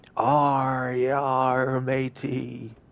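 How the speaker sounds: high stock pirate voice with yar drawn out. Repeating an impression of a pirate: imitating a pirate voice. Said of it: "Olivier's impression of a pirate".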